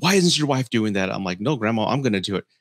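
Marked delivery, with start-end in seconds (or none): 0.0-1.1 put-on, angry, scolding yell. Retelling grandma's outburst after dinner when he cleared the plates: retelling an angry yell. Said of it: "she's yelling that in Spanish".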